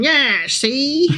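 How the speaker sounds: scoffing put-on board game mascot voice. Describing the Monopoly man to another speaker: Monopoly man voice. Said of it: "I can see him coming up and going".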